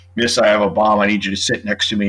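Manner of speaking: ordinary delivery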